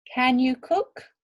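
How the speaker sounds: small rising lift on cook. Teaching how to ask a question: rising a little on cook. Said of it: "Our voice goes up a little bit as we're asking this question".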